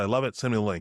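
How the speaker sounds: plain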